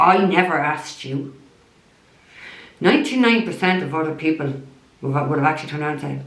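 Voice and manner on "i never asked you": angry, very slow delivery. Retelling Mark's reply to an offer of healing: imitating Mark's angry tone. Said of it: "In a very angry tone towards me".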